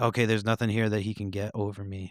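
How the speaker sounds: plain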